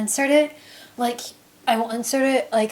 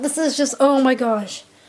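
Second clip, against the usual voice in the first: flustered, overexcited, freaking out. Retelling meeting someone after a show, flustered and overexcited. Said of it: "sorry, I'm, like, freaking out".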